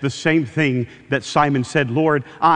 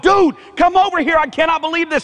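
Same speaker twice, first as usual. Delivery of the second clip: high, excited mock yell; 4 dB louder than usual. Retelling a fisherman calling to the other man in the boat: acted-out yell. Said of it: "he yells to the other guy in the boat".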